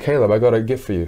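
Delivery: ordinary talk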